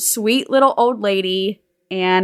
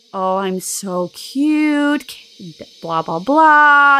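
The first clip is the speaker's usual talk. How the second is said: put-on slow, sweet, mellow, soothing, gentle little old-lady voice; 4 semitones higher, 3 dB louder than usual. Describing how a little old lady usually sounds: sweet, mellow old lady voice. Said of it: "a very sweet, mellow, calming voice".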